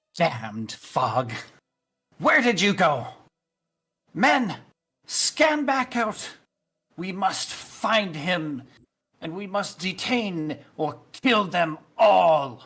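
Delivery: enraged tone. Game master voicing the High Inquisitor calling out to the party, angry. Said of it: "As her angry voice fades away".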